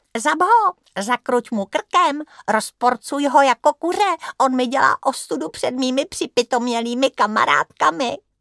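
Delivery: squeaky, high-pitched put-on mocking voice. Filip clowns in front of his family, in a squeaky mocking voice. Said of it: "pokračoval pisklavým hlasem".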